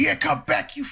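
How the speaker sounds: very high, screeching acted taunt. Retelling chasing off the other fighter: retelling screaming.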